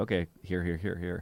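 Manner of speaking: ordinary talk, nothing marked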